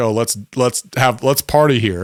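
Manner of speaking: ordinary talk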